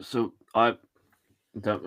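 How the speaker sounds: mumbled through a mouthful of food. Eating mince pies live on stream, talking with mouth full. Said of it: "I shouldn't talk with my mouth full".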